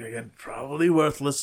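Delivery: quiet muttering under breath. Voicing a character examining a found green gem, muttering. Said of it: "Tantalus kind of mutters".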